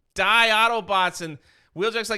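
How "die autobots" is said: frantic, high, loud panicked scream. Retelling a comic scene where a character attacks: imitating a panicked scream. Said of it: "in a panic, and he screams".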